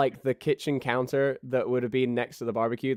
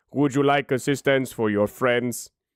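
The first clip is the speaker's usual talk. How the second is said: put-on character voice, much lower; 4 dB louder than usual. Storyteller voicing the night-shift character behind the counter: Swantres voice, much lower. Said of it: "Swantres' voice, much lower".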